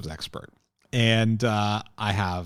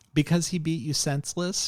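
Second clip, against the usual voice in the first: put-on high, unbothered, nonplussed old woman voice; 7 semitones higher than usual. Retelling a character's line to another speaker: imitating Catherine's grandmothery nonplussed voice. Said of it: "in that kind of grandmothery, you know, sort of, uh, nonplussed voice".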